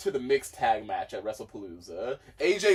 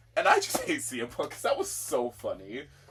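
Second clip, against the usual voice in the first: ordinary delivery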